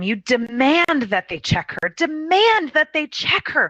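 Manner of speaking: mock tearful, frantic, very high, rising desperate scream. Retelling screaming at a passive man in a hospital hallway, retelling own screaming. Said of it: "I'm screaming this in the hallway".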